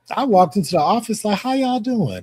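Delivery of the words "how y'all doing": cheery, chipper, upbeat good-mood voice. Recalling walking into the office and greeting coworkers, retelling a chipper greeting. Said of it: "in a chipper mood".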